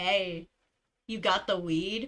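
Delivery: deepest, low, most masculine voice possible. Retelling calling through a door to a woman behind it, in the deepest voice possible. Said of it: "in the deepest voice I can possibly muster".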